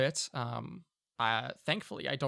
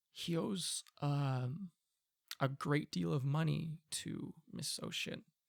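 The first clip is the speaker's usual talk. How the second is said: discreet, hushed, very quiet, slow murmur; 2 semitones higher, 6 dB quieter than usual. Voicing a character who glances around awkwardly, not wanting to offend: said very quietly. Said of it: "and he'll say very quietly".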